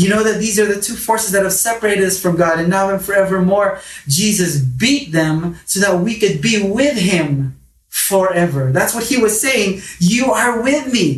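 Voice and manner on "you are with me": put-on, emotional, heartfelt outcry, higher pitched. Quoting the psalmist speaking to God: imitating an emotional cry. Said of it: "Hear the emotion".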